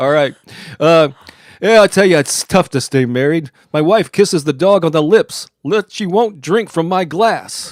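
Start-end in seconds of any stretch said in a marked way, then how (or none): 1.8-7.7 punchy nightclub stand-up comic one-liner delivery. Channeling Rodney Dangerfield to tell his marriage jokes: Rodney Dangerfield voice. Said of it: "do my best to channel Rodney Dangerfield in my voice".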